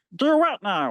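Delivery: deliberately bad, weak cartoon voice attempt. Quoting a favorite cartoon line: sad attempt at a Meatwad voice. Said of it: "my really sad attempt at a Meatwad".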